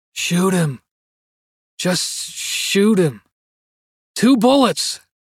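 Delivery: agitated, restless, faraway voice. A sleeping man speaks from the next bed, in an agitated, distant voice. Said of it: "in an agitated, distant voice".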